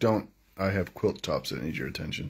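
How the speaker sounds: ordinary talk, nothing marked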